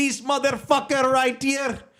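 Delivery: shrill, very high-pitched put-on Indian accent. Retelling what a man said to him, in an indian accent. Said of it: "in that Indian accent".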